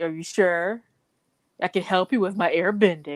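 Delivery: put-on mocking tone. Retelling how the siblings picked on Bumi: imitating a mocking tone. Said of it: "they're saying it in a mocking manner".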